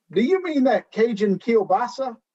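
put-on inaccurate Minnesota accent. Listing gumbo ingredients, the speaker quotes a line from an episode in a bad Minnesota accent. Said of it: "not an accurate Minnesota accent".

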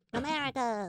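put-on cartoon character voice. Asked by a friend to say America in a Minion voice. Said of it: "That was my Minion voice".

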